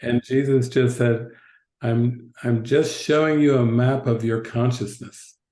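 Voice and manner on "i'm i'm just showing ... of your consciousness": ordinary talk, nothing marked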